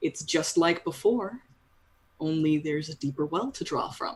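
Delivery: smooth, refined, polished, sophisticated male voice. Game master voicing an unseen man the players hear: smooth sophisticated man's voice. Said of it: "smoother uh, man's voice. he sounds very sophisticated".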